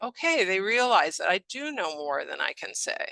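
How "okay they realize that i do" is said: ordinary delivery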